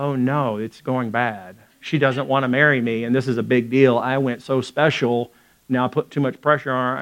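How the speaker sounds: ordinary talk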